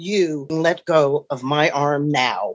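deep voice dropped low. Retelling telling someone to let go of his arm: dropped low voice. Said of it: "When I drop my voice, low".

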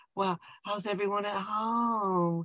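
high, very slow voice, "home" drawn out. Mimicking how a film character delivers a line: imitating Michael's voice. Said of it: "And he's talking like this".

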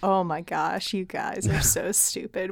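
put-on quiet laughing voice. Imagining a character overhearing oblivious people: imitating Éowyn laughing under her breath. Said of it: "laughing under her breath".

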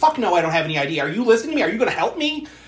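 put-on very high, shrill, rushed, frantic panicked outburst. Speaker retells a disheveled woman answering a request for id, mock-frantic and panicky. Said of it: "she's like frantic and panicky".

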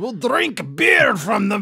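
badly done put-on voice, very loud, high and booming. Speaker tries a line in a film character's voice: bad Gimli impression. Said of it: "That was supposed to be Gimli".

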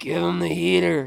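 gravelly, creaky delivery. Asked to do the voice of a favorite movie line: Major League movie voice. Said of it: "Can you do the voice?".

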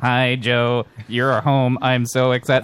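flat, level, very slow robotic machine voice. Acting out a robot greeting Joe at home: Hitchbot robot voice. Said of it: "roboting over".

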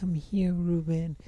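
put-on high-pitched, tiny young girl's voice. Imagining a voice calling out to Ruben, in a little girl voice. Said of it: "a little girl voice was like".

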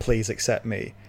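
ordinary talk

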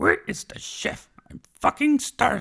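very high, loud, squeaky puppet voice. Doing [name]'s movie impression segment, Muppet character voice. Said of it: "this is [name]'s movie impression".

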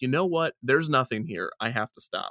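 ordinary delivery

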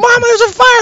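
mock shrill, very loud, high, frantic cry. Retelling warning a parent about a fire: imitating own panicked past words. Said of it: "And I'm freaking out".

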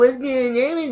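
put-on very high, soft, cooing baby-talk voice.

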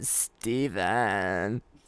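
put-on cartoon girl voice. Showing how a woman said his name, like Lola from Big Mouth. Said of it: "Like Lola from Big Mouth".

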